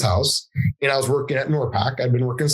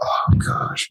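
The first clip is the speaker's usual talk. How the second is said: whispered, dismayed groan. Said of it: "And I was like".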